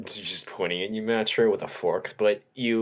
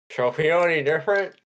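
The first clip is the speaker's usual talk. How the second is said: mouth full while talking, higher and louder; 6 semitones higher, 5 dB louder than usual. Voicing a character asking about feeling different: talking with a mouthful of cake. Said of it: "with a mouthful of cake".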